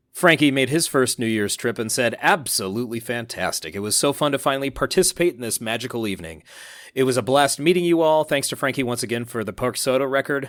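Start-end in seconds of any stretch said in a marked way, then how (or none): none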